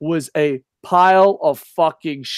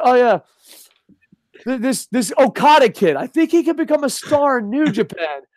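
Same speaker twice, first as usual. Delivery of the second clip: put-on completely sincere, straight-faced, earnest, zero sarcasm; 7 semitones higher than usual. Retelling a fan's post from Twitter: imitating an earnest fan, no sarcasm. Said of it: "There wasn't an ounce of sarcasm".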